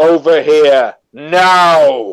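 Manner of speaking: loud, booming voice rolling like thunder. Narrator voices a command heard inside two vampires' heads, voice like thunder. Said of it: "a voice like thunder".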